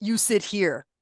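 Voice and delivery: ordinary talk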